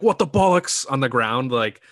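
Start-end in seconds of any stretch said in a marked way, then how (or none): 0.0-0.9 shrill, very high, loud scream. Retelling a fighter screaming on the ground: imitating Conor McGregor screaming in his accent. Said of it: "when he's screaming".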